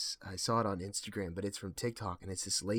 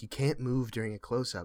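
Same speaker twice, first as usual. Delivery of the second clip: usual speaking voice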